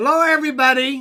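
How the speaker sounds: very loud, high, booming, projecting voice. Greeting everybody on camera, projecting voice loudly. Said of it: "I gotta watch my voice".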